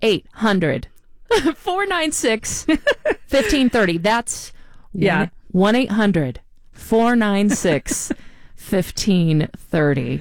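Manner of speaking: slow, unhurried pace, one digit at a time. Asking listeners to call and donate, reading out the phone number: saying it slowly. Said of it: "I'm going to say it slow".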